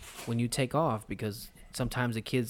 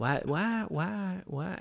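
high, very slow, each word drawn out; 8 semitones higher than usual. Repeating a line from a movie as Tyler Perry impression. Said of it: "That was my Tyler Perry impression".

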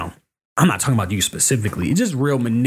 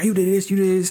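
acted yelling, much higher; 7 semitones higher than usual. Retelling yelling at a man while rushing home from work: retelling a yell. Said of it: "I'm yelling at this motherfucker like".

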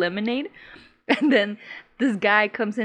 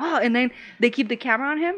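ordinary delivery

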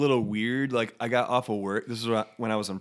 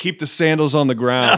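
mock-annoyed, pissed-off put-on tone, louder; 4 semitones higher, 10 dB louder than usual. Retelling handing sandals to Preston's friend, imitating Ron Wolf, pissed off. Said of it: "like in a pissed off tone".

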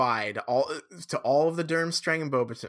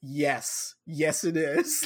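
put-on deadpan, very slow flat monotone. Describing an awkward movie scene, speaker acts out the line: mimicking a flat delivery. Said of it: "just flatly".

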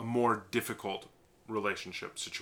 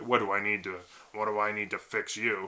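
contemptuous, sarcastic, mocking tone. Showing how the helping question sounds asked in a really sarcastic way. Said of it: "in a really sarcastic way".

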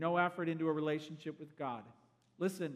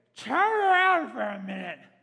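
mock drunk woman's loud, sloppy speech; 7 semitones higher, 12 dB louder than usual. Retelling what a woman at the pool bar said: imitating a drunk woman. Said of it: "she is drunk as a skunk".

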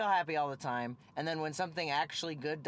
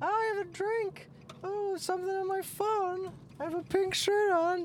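squeaky, very high, mocking mimicry; 4 dB louder than usual. Imitating a woman passing on the street, mocking impression of a passerby. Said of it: "I want to do an impression of her".

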